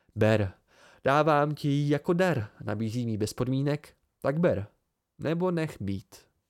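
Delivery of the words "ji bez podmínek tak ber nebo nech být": ordinary delivery, nothing marked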